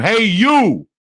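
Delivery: put-on high, loud, hollered New Jersey accent yell. Retelling a man yelling to him across the room, imitating his New Jersey yell. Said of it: "yells across the room".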